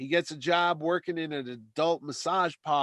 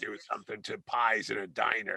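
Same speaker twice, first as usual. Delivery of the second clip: strained put-on voice, lower and quieter; 7 semitones lower, 5 dB quieter than usual. Discussing an actor's performance, the speaker mimics his voice: throat-straining character voice. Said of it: "that hurts your throat when you do that".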